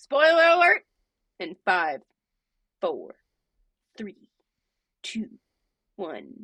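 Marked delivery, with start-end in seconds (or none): 1.4-6.4 dramatic announcer voice, much lower. Telling listeners who haven't finished the series to leave: IMAX countdown voice. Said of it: "I sounded like the IMAX countdown".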